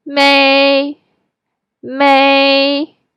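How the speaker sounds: may said with high level first tone. A teacher models a tone for learners to practice: high flat tone. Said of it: "Keep it flat and high".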